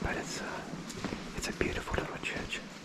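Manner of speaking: soft, hushed, quiet whisper. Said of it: "I'm whispering because, you've gotta be very quiet in here".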